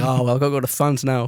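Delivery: put-on unbothered voice. Retelling a film scene, imitating Liam Neeson unbothered. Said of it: "And he's like".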